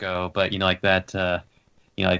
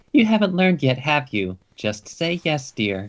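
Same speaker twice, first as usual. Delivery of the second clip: put-on high-pitched woman's voice; 7 semitones higher than usual. Describing one character elbowing another, the speaker voices him in a woman's voice. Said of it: "says in a woman's voice".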